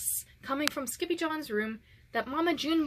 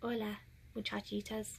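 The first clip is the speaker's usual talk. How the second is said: very soft, hushed voice; 4 semitones lower, 10 dB quieter than usual. The kitty boy tumbles out of the closet and speaks: very soft voice. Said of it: "he said in a muy, muy soft voice".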